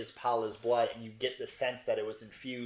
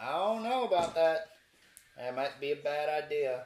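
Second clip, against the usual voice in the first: mock southern-sounding voice; 4 semitones higher than usual. Narrating a scene, voice a character's telepathic words in a southern accent. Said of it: "I don't know why he just went southern".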